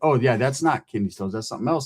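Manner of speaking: ordinary delivery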